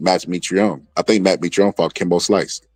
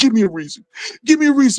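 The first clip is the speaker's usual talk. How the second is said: put-on tearful, very high, begging crying voice. Retelling an episode where a fighter came into the house; imitating someone crying. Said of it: "Marcus comes in the house and he's crying".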